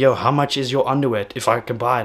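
ordinary talk, nothing marked

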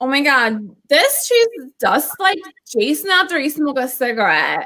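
put-on swooping Valley Girl accent. [name], prompted by another speaker to valley girl it, valley girl voice. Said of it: "I want [name] to Valley Girl that shit".

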